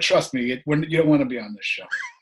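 ordinary talk, nothing marked

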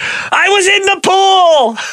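very high, long drawn-out slow scream. Reading out viewer answers on who it would sound like: Jason Alexander screaming. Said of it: "sound like Jason Alexander screaming".

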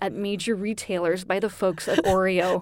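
ordinary delivery

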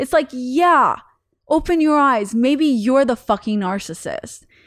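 annoyed, fed-up, irritated snapping. Speaker who says they finally snapped, venting to listeners: irritated. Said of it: "I know I sound so irritated".

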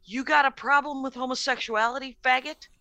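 plain

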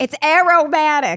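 loud, heavy, thick, put-on New York accent. Commenting on a drink while chatting, in a thick new york accent. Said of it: "I'm saying that with the most thick and like New York accent".

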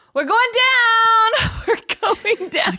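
put-on child's shriek, very high, shrill, drawn out, falling. Retelling a son on an airplane, imitating a child screaming. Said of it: "Just screaming".

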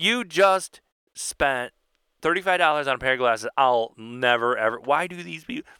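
normal talking voice

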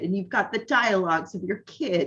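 normal talking voice

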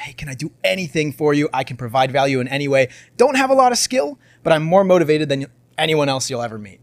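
usual speaking voice

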